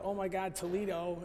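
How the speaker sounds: ordinary delivery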